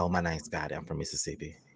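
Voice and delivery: very deep, hushed, soft, smooth suave voice. Retelling meeting new coworkers, imitating own put-on deeper voice. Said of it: "little bit of funk on my voice".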